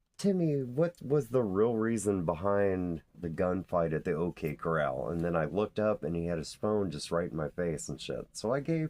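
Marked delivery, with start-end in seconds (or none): none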